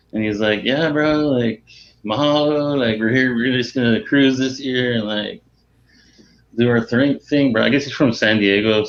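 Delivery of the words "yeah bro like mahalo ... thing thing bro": beach surfer-dude voice. Retelling head coach Rich Hill talking on the radio, in a Rich Hill surfer-dude impression. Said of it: "so he's real like surfer, surfer dude".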